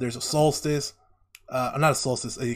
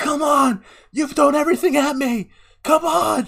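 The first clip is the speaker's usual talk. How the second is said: very high-pitched, loud screaming; 9 dB louder than usual. Describing a storm scene on a mountain, Zuko screaming. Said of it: "he's just screaming there".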